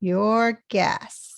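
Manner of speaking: emphasized 'your guess'. Teaching intonation, the speaker demonstrates the sentence with stress on 'your guess'. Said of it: "you see the stress on your guess".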